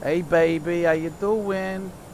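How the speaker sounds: put-on New York accent. Spotting Honolulu, the speaker greets it in a New York accent. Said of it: "I'm speaking a New York accent".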